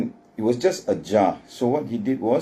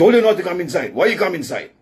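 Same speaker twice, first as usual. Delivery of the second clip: put-on authoritative voice, higher, faster; 8 semitones higher, 4 dB louder than usual. Retelling what a man said when someone came inside, mock-authoritative voice. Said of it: "the voice was very, very authoritative".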